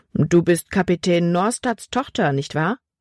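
ordinary delivery, nothing marked

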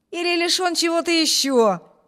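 high, provocative, defiant mocking jeer. Narrator reading a younger brother's retort to his older brother, defiant mocking tone. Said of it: "вызывающий насмешливым тоном".

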